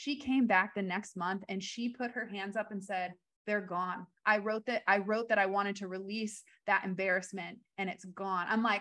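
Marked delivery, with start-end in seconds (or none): none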